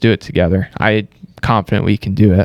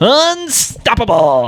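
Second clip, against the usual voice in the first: manic cartoon voice, higher pitched; 14 semitones higher than usual. Showing how Jim Carrey says it with the mask on. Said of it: "flicks his head to the side".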